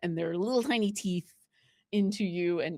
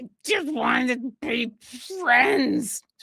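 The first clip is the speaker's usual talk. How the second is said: high gnomish creature voice; 6 semitones higher, 4 dB louder than usual. Voicing a mimic that copies a gnome, speaking to a player: mimicking a gnome's voice. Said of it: "like the gnome that it was".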